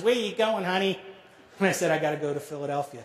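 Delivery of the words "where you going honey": put-on New York accent, put on. Retelling what a woman said after they got off the train, in a New York accent. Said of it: "in her finest New York accent".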